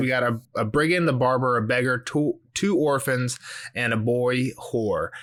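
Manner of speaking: ordinary talk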